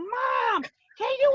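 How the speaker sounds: put-on yelling child voice. Retelling how a child called out from the other room: imitating a child yelling. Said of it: "yelling from the other room".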